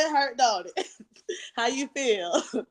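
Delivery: acted, playful, teasing, ribbing tone. Retelling an aunt teasing while the speaker cried in church: imitating an aunt teasing. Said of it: "Talking so much junk".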